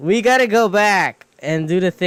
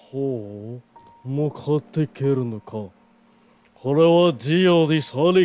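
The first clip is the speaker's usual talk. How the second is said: put-on choking voice; 5 semitones lower than usual. Showing how a character talks, as if choking a little: Dio voice. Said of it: "That's how he talks, like".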